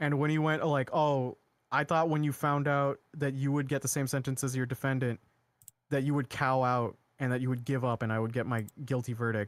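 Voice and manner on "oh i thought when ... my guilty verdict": ordinary talk, nothing marked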